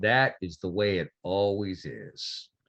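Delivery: voice dropped down deep. Voicing a marshal greeting Robert at the door: deep Marshal Mike voice. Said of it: "the deep voice says".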